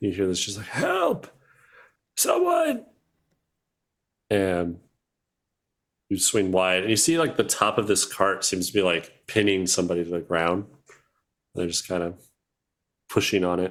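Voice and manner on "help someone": very high, winded, out-of-breath call. Recounting hearing someone pinned under a cart call out: imitating a quiet, winded yell. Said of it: "They sound like they're um, kind of winded".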